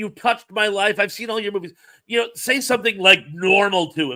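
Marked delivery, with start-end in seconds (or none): 0.0-1.7 mock fan gushing, higher. Showing what not to say to a celebrity: imitating a gushing fan. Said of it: "Don't just gush on him".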